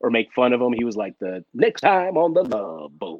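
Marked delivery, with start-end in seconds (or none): 1.2-3.2 network announcer voice, like a promo. Telling how announcers try to do the voice of ABC, give an Ernie Anderson voice. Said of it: "try to do his voice".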